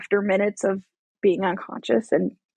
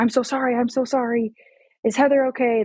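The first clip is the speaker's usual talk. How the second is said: dazed, panicked, shocked, pleading tone; 3 semitones higher than usual. Retelling the crash, quoting the father yelling in shock: imitating someone yelling in shock. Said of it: "my dad was in shock, just, um, yelling".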